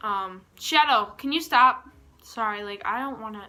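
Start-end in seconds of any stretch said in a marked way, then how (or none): 0.6-1.9 high, loud yelling. Speaker breaks off their story to yell at one of their dogs. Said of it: "I'm yelling at my dogs".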